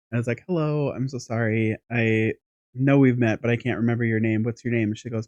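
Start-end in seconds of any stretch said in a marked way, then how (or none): none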